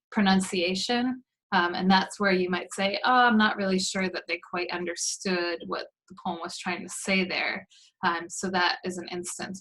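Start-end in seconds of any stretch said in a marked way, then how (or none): none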